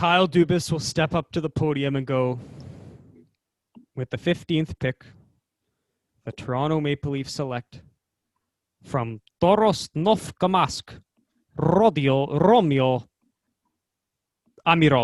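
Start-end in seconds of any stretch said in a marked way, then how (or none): 4.0-15.1 put-on strict, stern-sounding Russian accent. Imitating Kyle Dubas announcing a draft pick: strict Russian accent. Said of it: "he will say it in a strict Russian accent like that".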